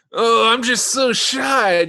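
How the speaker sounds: slow, drawn-out, coy voice, pitched high. Retelling how Davy pretends to be shy: imitating Davy's put-on shy voice. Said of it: "trying to pretend he's shy".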